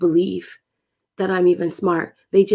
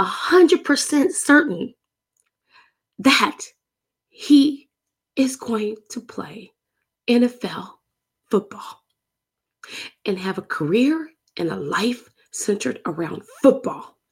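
halting, choked-up delivery, voice breaking with emotion; 3 semitones higher than usual. Telling listeners he is certain of someone's football future, getting emotional. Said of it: "i'm getting emotional".

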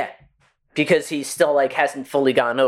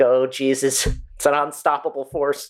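ordinary delivery

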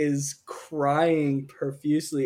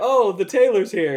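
acted-out flustered, jittery nervousness, high and raised; 5 semitones higher, 6 dB louder than usual. Retelling a scene where a character feels nervous: imitating Kronk sounding nervous. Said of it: "feeling nervous".

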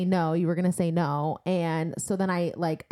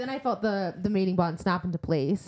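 normal talking voice

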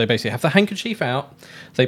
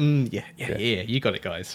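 put-on proud, pleased tone, lower and quieter; 4 semitones lower, 5 dB quieter than usual. Retelling a TV character showing off to his friends: imitating Joey being proud of himself. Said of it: "does that anytime he's proud of himself".

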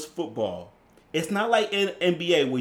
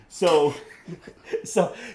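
ordinary delivery

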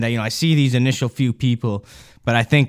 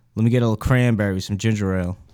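dead-serious, straight-faced, no-joke deadpan delivery; 3 semitones lower than usual. Ordering a drink while looking someone dead in the eyes: straight-faced. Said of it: "with a straight face".

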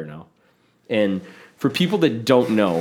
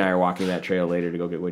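ordinary delivery

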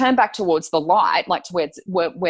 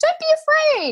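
very high, thin, piping female voice. Retelling a voice heard while walking, in a very high-pitched woman's voice. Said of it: "very high pitched, like a woman's voice going".

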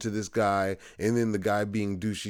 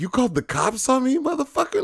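mock indignant, very high, swooping, rising offended tone; 7 dB louder than usual. Retelling a movie scene where Jimmy turns back at the guy: imitating Jimmy sounding offended. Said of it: "he's offended".

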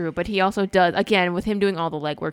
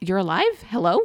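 normal talking voice

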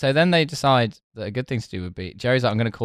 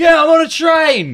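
shrill, very slow, very loud, drawn-out yell; 11 dB louder than usual. Retelling a comedy bit with a huge phone: imitating Dom Jolly yelling into phone. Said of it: "a guy would yell into a big phone".

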